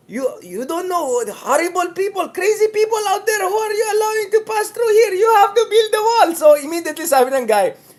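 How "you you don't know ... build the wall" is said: put-on Turkish accent, pitched up, ranting. Retelling what a man at the border told a news interview: imitating a turkish accent. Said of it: "in Turkish accent".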